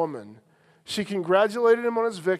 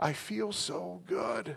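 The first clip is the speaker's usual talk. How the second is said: put-on very soft, hushed, sweetest little-girl voice; 12 dB quieter than usual. Retelling what the stepdaughter said to the speaker: Brandy's sweet little girl voice. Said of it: "said in the sweetest little girl voice".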